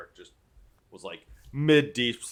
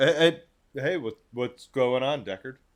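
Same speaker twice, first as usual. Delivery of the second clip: groggy, just-woken character voice, pitched up; 6 semitones higher, 5 dB louder than usual. Voicing Alaric being shaken awake: Alaric just woken from deep sleep. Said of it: "Alaric would be like".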